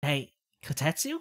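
soft put-on kid voice. Playing through a game, voicing a kid's line in a different voice. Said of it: "Let me use a different voice for this kid".

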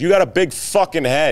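sudden yell, pitched very high. Speaker retelling what one of the guys yelled at him, retelling a yell. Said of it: "he yelled".

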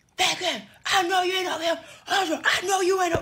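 mock, loud, very high, furious mother-voice hollering. Retelling how an angry mom showed up: imitating mom hollering angrily. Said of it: "why you hollering so loud?".

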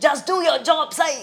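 acted-out shout. An actress recalls the director yelling at her before the whole set, retelling a loud shout. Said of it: "मला ओरडला जोरात".

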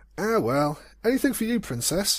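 very high, heartfelt, earnest, sincere voice. Narrator reads Spike answering the Princess's thanks: earnest. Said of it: "he said earnestly".

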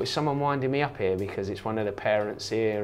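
plain

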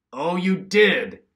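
mocking, scornful, high-pitched sarcastic retort. A narrator reads Ken's father replying to his son Ken, sarcastic. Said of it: "His father was sarcastic again".

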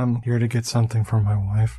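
creepy whispered voice. Retelling a creepy movie scene, imitating the killer: imitating a creepy whisper. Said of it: "his whispering is".

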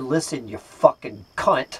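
put-on muttering under breath. Retelling what was said to the manager, imitating muttering under breath. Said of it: "obviously I said that under my breath".

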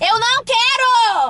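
shrill yell, very loud and very high. Refusing what is being handed over, shouting. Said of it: "Para de gritar".

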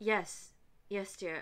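put-on British-accented speech. Voicing Aziraphale answering a question in a blooper: Aziraphale British accent. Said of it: "since I've had to do a British accent".

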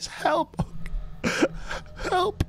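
faintly calling out. Narrating a scene, the speaker voices someone crying for help: very faint cry for help. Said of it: "crying for help in a very faint voice".

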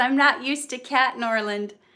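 plain

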